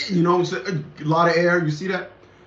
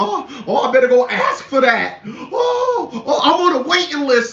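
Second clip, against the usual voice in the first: high, slow, scornful, derisive put-on voice; 8 semitones higher, 4 dB louder than usual. Mocking people who keep filing for programs: mocking imitation of program addicts. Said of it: "Everybody gotta go and file for something".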